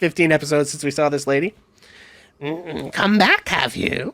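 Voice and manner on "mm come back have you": put-on creepy, slow old crone voice. Voicing an old crone greeting players as they enter: old crone voice. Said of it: "that's the voice she has now".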